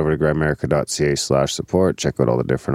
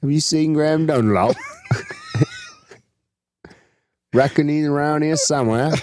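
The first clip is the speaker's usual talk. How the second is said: put-on English accent, very high and swooping; 12 semitones higher than usual. A speaker redoes a question about a missing man, in an English accent. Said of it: "I should have done my English accent".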